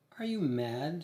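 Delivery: stage-hushed, secretive voice. Reading a story aloud, the narrator voices the prostitute's question in a hushed voice. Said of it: "Says the prostitute in a hushed voice".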